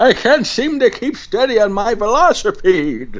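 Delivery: put-on old man voice, way up high. Describing their own wipeout, answering in an old guy voice. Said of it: "I love old guy voice".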